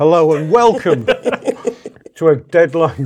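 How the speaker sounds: very slow, through a mouthful of food. Opening the show with a welcome, talking with food in mouth. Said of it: "I got food in my mouth".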